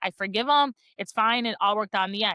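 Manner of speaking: normal talking voice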